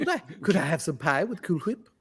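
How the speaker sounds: put-on babyish cartoon character voice. Joining in a running Cool Whip bit with others, ask in a Stewie Griffin voice. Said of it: "That sounded exactly like Stewie".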